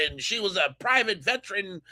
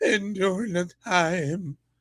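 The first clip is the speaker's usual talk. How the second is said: choked up, words catching, frog-in-throat voice. Watching a clip, the speaker repeats the man's words; mock choked-up voice. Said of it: "Now I got a frog in my throat".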